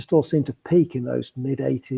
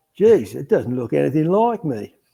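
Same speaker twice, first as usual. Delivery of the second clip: best attempt at a put-on Australian accent. Answering a request to give the best Aussie accent: Aussie accent. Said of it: "give me your best Aussie accent".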